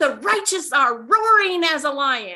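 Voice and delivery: put-on screaming man voice. Retelling a man heard over the phone: imitating a man screaming. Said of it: "man screaming down the phone".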